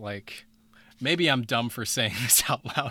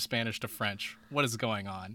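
ordinary talk, nothing marked

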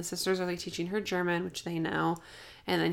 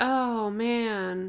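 mock sarcastic tone, higher; 3 semitones higher than usual. Retelling a character's reaction to her uncle's death: sounding sarcastic. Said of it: "This sounds like I'm being sarcastic".

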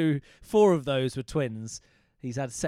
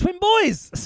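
very high, sudden, loud blurted shout; 7 dB louder than usual. In a conversation, the speaker suddenly shouts out. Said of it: "I didn't mean to shout twin boys".

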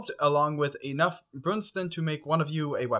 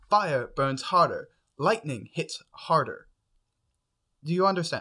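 stressed-out, pressured delivery. In a role-play, a character explains enchantments to the listener, stressed.

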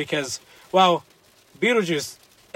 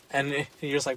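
plain

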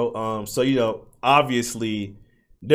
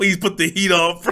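put-on shivering, pleading voice, pitched higher; 6 semitones higher than usual. Retelling a roommate begging in the freezing cold: imitating someone shivering and pleading. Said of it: "He's, like, shivering".

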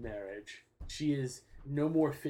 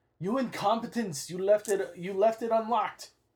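furious scolding yell, loud and high; 9 semitones higher, 8 dB louder than usual. Narrating a scene, the speaker voices a character stopping at the door: yelling. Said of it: "he yells".

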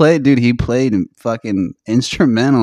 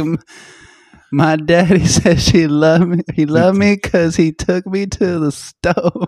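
put-on high, childlike little-kid voice; 6 semitones higher than usual. Imitating a child talking about her father: imitating a child. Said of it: "She's like".

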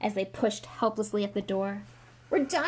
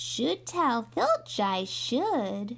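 sweet, pious, saintly, falsely innocent tone; 2 semitones higher than usual. Peeves answers the first-years begging him not to give them away, saintly voice. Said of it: "said Peeves in a saintly voice".

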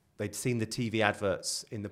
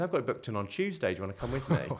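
put-on dry, sarcastic, swooping tone; 2 semitones higher than usual. Retelling their comeback to their dad's question, retelling a sarcastic reply. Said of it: "and sarcastically".

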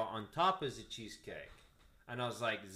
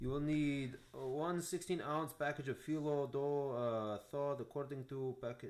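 put-on, fake German accent; 3 semitones higher, 4 dB quieter than usual. Reading recipe instructions aloud for the group, in a fake German accent. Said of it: "then my German just left me".

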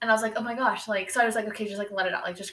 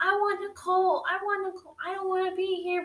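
put-on child scream, higher pitch; 10 semitones higher than usual. Retelling how a child in a car seat screamed: imitating a child screaming.

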